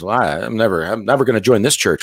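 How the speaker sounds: ordinary talk, nothing marked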